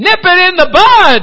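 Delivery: very high, very loud, booming, drawn-out belted cry. Retelling how a man finally answered in church, doing a Barney Fife voice. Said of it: "he decided to use the voice of Barney Fife".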